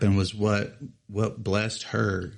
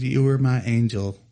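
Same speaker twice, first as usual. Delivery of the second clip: plain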